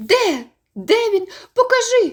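very high cry, barely catching breath. The narrator's 'skylark' cries out as Michael points somewhere: breathless exclamation. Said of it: "вигукнула мій жайворон, ледве зводячи подих".

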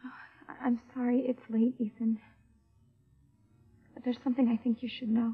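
upset, troubled-sounding voice. A woman calling a man late to tell him something, upset. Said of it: "You sound upset".

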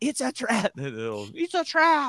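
croaking, alarmed alien voice.

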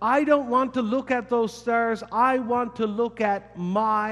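shouted.

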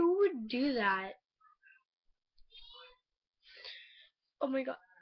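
tearful speech, crying while talking. Telling everyone about a friend who went behind their back, crying while talking. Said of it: "I'm like crying right now".

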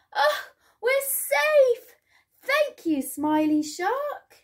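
very high, slow, drawn-out glad cheer. The fish thank the shark after the fisherman flees, cheering. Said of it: "cheered the fish".

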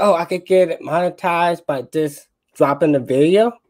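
ordinary talk

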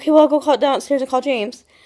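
ordinary talk

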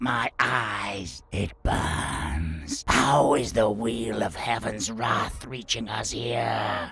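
drawn-out, slow, high, agonized troll shriek. A troll, struck in the face by a ray of light, shrieks in agony. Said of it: "The slim-nosed troll shrieked".

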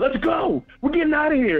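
play-acted, high, hyped-up excited yell. Recounting a football game, quoting a companion, retelling a scream. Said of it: "He started screaming like".

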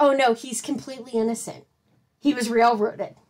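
ordinary talk

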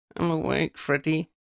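crabby grumbling, a touch high. Woken by freddy shaking her, she answers him, grumbling. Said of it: "she grumbled".

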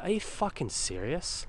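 acted, stunned, cursing, outraged incredulous outburst. Retelling an argument with a woman questioning where the money came from: retold incredulous outburst. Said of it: "incredulous outburst at bank teller".

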